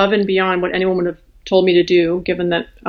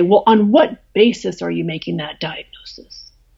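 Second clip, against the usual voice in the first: mimicked aggressive, hostile, confrontational voice. Retelling how the infectious disease people cut the speaker off, mimicking an aggressive voice. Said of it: "in a very aggressive voice say".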